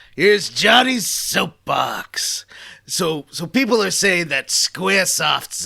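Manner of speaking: put-on New York accent. Opening a rant corner styled after a TV commentator: Andy Rooney impression with New York accent. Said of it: "I don't know if you had a New York accent".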